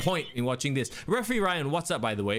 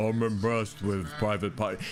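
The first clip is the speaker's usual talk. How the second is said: deep, dull, low-energy voice; 6 semitones lower than usual. Imitating what you hear Big Show say: Big Show impression, low voice. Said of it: "It's because of his low voice".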